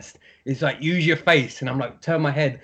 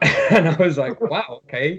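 normal talking voice

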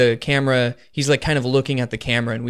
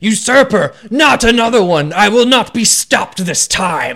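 enraged scream, high-pitched and loud; 8 semitones higher, 6 dB louder than usual. Voicing the attacker in a fight scene, screaming. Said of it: "And he screams".

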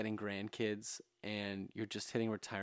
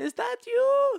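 put-on surprised old woman voice, higher and louder; 15 dB louder than usual. Retelling a surprise visit, imitating grandma's surprised voice. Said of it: "She said it like that?".

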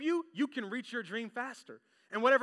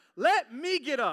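put-on loud, very slow, drawn-out scream; 5 dB louder than usual. Retelling what she screamed while lying on a restaurant floor: imitating someone screaming. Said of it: "screams in the restaurant".

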